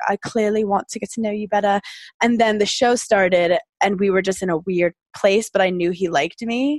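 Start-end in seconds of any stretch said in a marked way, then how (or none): 0.1-1.8 put-on British accent. Retelling what Dave said after the breakup: Dave in a British accent. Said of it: "Do you like my British accent?".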